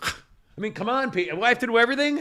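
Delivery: sudden shouting outburst. Speaking to Pete on a show funded by listeners, yelling. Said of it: "Sorry, I didn't mean to yell".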